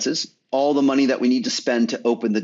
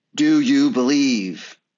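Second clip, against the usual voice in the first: mock heavenly voice, booming down from above. In a joke, the voice from the heavens answers a battered man: booming voice from above. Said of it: "a voice booms back down".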